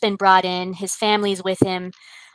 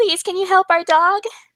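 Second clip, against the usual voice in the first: put-on very high, loud sobbing little boy voice; 12 semitones higher, 5 dB louder than usual. Voicing a sobbing little boy asking the vet for help: sobbing little boy. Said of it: "He's, he's sobbing, and he says".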